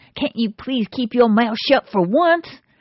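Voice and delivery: angry, growling voice. Telling a joke, voicing the driver speaking to his wife: retelling a growl. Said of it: "he growls".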